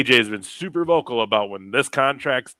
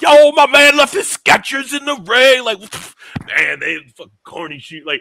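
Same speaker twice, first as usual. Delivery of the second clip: mock drunk holler, very loud and very high; 14 semitones higher, 8 dB louder than usual. Retelling a post show moment: imitating drunk Jey Uso. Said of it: "high or drunk, and he's just all fucking".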